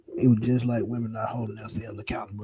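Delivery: hushed half-whisper under the breath. Sharing a remark the speaker doesn't want overheard: half-whispering. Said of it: "I'm gonna have to whisper this".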